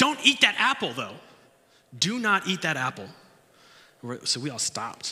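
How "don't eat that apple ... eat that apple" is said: high, loud yelled delivery. Retelling how an instructor stopped them eating apples: imitating a yell. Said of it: "and he yelled at it".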